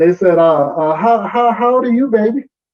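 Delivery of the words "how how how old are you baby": put-on high voice with Southern dialect accent. Quoting people asking the speaker's age: southern dialect. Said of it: "this is the Southern dialect".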